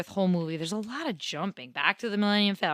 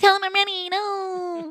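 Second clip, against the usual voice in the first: put-on whining voice, higher and louder; 13 semitones higher, 6 dB louder than usual. Retelling a scene, imitating Luke whining. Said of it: "He's whining".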